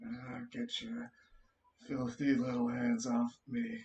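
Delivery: dazed mumble, half to himself, under the breath. As he is taken away by the pygmies, he speaks, muttering. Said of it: "he mutters in his in his like state".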